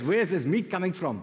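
put-on South African accent. Retelling a story about horse riders at the police station, in a South African accent. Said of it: "That's the South African accent".

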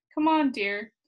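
ordinary delivery

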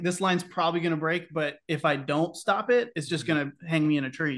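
plain

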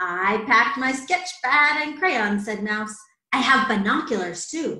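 plain

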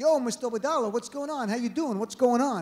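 put-on New Jersey street accent in a kid voice. Retelling how the Jersey kids greeted the speaker's dad, Jersey accent. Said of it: "the Jersey kids have an accent".

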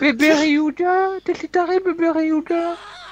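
high-pitched, slow, teasing yell.

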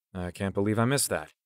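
ordinary delivery

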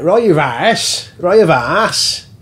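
very slow, deliberate Lancashire accent. Asked how it would be said in lancashire, demonstrating a lancashire accent. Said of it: "if you say it in Lancashire".

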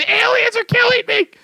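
very high, shrieking, put-on scream. Retelling how the other player sounded when killed: imitating someone screaming. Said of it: "screaming, saying".

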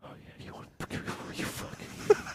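unvoiced, very soft, sleazy whisper. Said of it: "sexy customer coming into the gas station".

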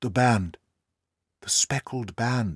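whispering. Holmes, entering a room with the narrator, whispered. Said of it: "whispered Holmes".

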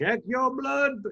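awkwardly strained, very high pitched voice. Imitating a famous man telling people to check their blood: bad Martin Luther King impression. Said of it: "I'm doing a bad impression".

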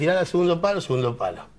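ordinary delivery

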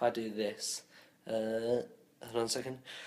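quiet, hushed, soft speech. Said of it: "I'm speaking quietly".

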